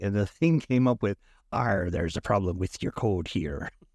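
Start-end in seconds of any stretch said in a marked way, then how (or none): 1.5-3.7 put-on stock pirate voice, arr and all. Retelling an error message written in pirate speak: pirate voice. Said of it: "written in pirate speak".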